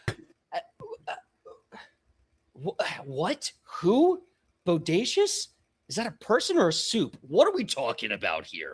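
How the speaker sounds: high, swooping, flustered, overwhelmed, bewildered orc warrior voice. Voicing an orc warrior greeted by a stranger: confused orc warrior. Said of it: "looks so confused and overstimulated".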